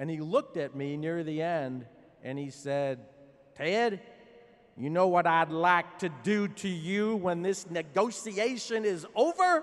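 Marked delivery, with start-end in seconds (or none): 3.6-9.6 put-on drawling Texas accent, raised. Quoting a man near the end of a negotiation, in a Texas drawl. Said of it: "that Texas drawl".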